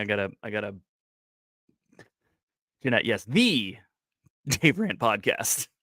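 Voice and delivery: talking through laughter. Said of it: "I'm not laughing, uh, but I'm laughing".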